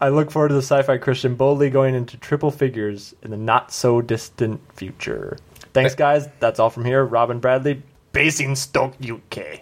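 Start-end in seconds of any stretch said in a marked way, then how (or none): 7.0-9.6 put-on angry German accent, slower. Reading a listener's sign-off aloud on the show: put-on angry German accent. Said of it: "That was angry German".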